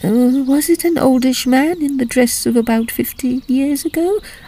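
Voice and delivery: eager, hopeful voice with pitch rising up. Mrs. Norbury asks Ada about the ghost she saw, hopefully. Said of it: "Norbury hopefully".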